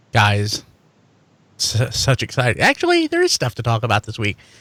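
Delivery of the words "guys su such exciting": sarcastic, stumbling delivery. Introducing the week's episode to co-hosts: sarcastic. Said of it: "I was trying to be sarcastic".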